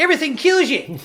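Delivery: terrible put-on Australian accent. Quoting an australian man talking about texas, in a bad australian accent. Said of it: "My my Australian accent was terrible".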